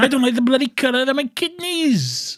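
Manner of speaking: put-on unintended Welsh accent, pitched very high. Retelling a man's complaint about his new kidneys, in an accidental Welsh accent. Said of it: "I sound Welsh for some reason".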